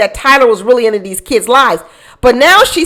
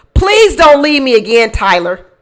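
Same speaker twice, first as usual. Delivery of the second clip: mock pleading, begging tone. Reading out a message where she begs him: imitating someone begging. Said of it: "She's begging him".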